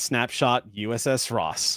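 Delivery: ordinary talk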